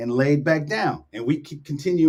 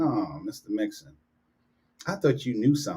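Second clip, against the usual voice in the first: mock voice dripping with scornful disgust; 6 semitones lower, 7 dB quieter than usual. Retelling a kid's reply about his shoes: imitating a disgusted kid. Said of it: "He just looked at me with disgust".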